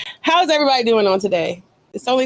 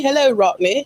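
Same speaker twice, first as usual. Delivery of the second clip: higher-pitched put-on English accent; 5 semitones higher than usual. Host greeting a special guest by name, English accent. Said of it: "I was compelled to use an English accent when I said your name".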